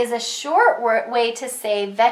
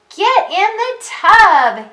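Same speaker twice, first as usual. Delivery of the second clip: very high, loud, thrilled sing-song exclamation; 9 semitones higher, 7 dB louder than usual. Reading a story aloud to a listener following along, very excited. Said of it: "say it in a very excited way".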